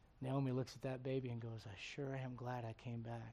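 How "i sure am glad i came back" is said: mock, tearful, weeping speech. Retelling a story of a woman holding a baby: acting out tearful speech. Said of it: "with tears streaming down her face".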